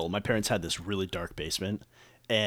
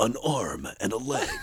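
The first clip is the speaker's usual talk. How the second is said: put-on movie trailer announcer voice. Speaker retelling a bit about the movie trailer guy as a car salesman, movie trailer announcer voice. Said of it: "or the movie trailer guy".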